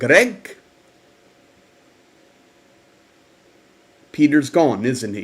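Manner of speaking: put-on woman's voice, South African accent, level tone. Retelling what Ma Rose said to you on a phone call, imitating Ma Rose's South African accent. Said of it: "in that South African accent".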